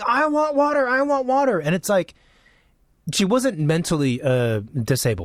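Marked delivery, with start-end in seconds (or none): 0.0-1.6 very high-pitched mock screaming. On a plane before takeoff, the speaker retells a woman, retelling a woman screaming. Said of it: "she starts screaming".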